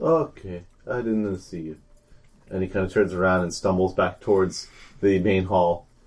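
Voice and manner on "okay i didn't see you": slow, dazed, vacant, spellbound delivery. Voicing a guard who is bewitched into looking away: dazed, bewitched. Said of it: "his eyes glaze over, and he sort of says".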